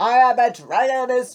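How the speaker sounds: ordinary delivery, nothing marked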